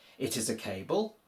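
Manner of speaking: rising, question-like pitch at the end on cable. Showing how Polish speakers ask questions without inversion: rise on cable. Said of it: "raise your pitch towards the end to make it sound like a question".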